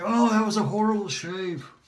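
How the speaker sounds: high, irritated tone. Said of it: "I'll be irritated and say".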